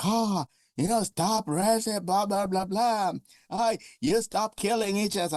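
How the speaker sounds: high-pitched, scolding, yelling rant. Retelling what a woman in a video said: imitating a woman yelling. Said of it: "yelling at him, like".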